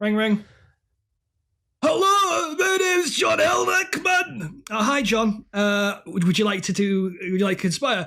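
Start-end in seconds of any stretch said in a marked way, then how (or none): 1.8-4.6 high, slow put-on Scottish accent. Voicing the conspirator John Elrickman answering a phone call; put-on Scottish accent. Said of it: "I think boom, Scottish there".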